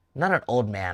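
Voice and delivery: ordinary talk, nothing marked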